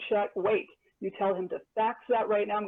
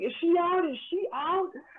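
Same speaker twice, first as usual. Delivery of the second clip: acted-out, shrill, very high screaming; 10 semitones higher than usual. Retelling a friend's phone call to the father: imitating Tina screaming. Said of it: "she was screaming".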